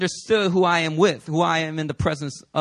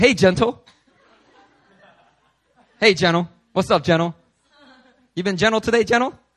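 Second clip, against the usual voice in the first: put-on teasing voice, thick with sarcasm; 2 semitones higher, 4 dB louder than usual. Speaker recalling a group habit of teasing greetings, mock-sarcastic teasing. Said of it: "we were just sarcastically calling each other "gentle"".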